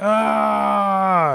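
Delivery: high, pained yell. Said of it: "as he yells on the ground".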